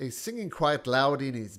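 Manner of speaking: ordinary delivery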